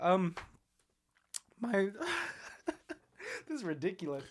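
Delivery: hushed, very quiet, high laughing through tears. Getting unexpectedly emotional while talking about something, laughing through tears. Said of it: "the laughing and crying is kind of scaring me".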